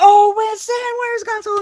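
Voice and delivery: very high, loud screaming. Retelling a frantic drive with the gas pedal floored: retelling own screaming. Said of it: "I'm screaming at Winston".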